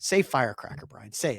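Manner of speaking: mock, mean, goading, jeering taunt. Retelling how a sister pushed him to say a word: imitating a sister taunting. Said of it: "my sister would constantly go".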